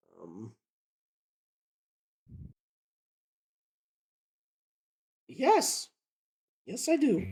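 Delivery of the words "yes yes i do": whispered, airy, breathy put-on young lady voice. Improvising a scene, the speaker voices the young lady's reply: young lady voice. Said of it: "Love that voice".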